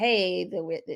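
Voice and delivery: ordinary delivery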